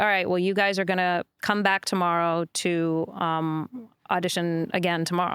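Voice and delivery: ordinary talk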